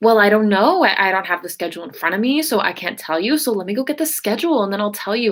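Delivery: put-on, super rude, openly rude tone. Retelling a phone call about work: imitating someone being rude. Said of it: "being super rude".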